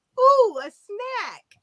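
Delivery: put-on very high, thrilled, excited little child voice. Retelling shouting out in church as a small child, in put-on excited little child voice. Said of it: "in my little child voice".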